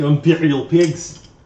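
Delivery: clumsy, bad put-on Russian accent. Working out a socket size in Imperial, attempted Russian accent. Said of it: "I tried to be Russian again".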